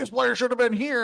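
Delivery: high-pitched yell, as if from a distance. Imagining a coach yelling on a broadcast: imitating Nick Saban yelling. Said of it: "Saban, like, yelling".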